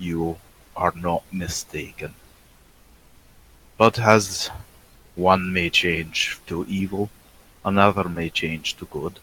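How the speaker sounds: strange, put-on, vaguely Hungarian accent. Voicing Turkum addressing the humans at the council: odd put-on accent. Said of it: "what is this accent tonight?".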